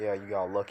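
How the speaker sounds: usual speaking voice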